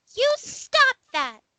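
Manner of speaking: very high-pitched voice. Game master voices an unseen figure calling from the east, high-pitched. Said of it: "is probably more high pitched than Diamond can effectively do".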